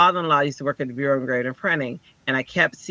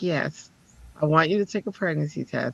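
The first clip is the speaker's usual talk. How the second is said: put-on calm, even voice; 4 dB quieter than usual. Retelling what a college counselor said: imitating Sandy's calm voice. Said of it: "this is how she talks".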